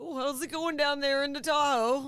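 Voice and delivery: put-on teasing Canadian accent. Making fun of parents' pronunciation of taco: imitating parents' canadian accent. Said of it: "I like to make fun of my parents".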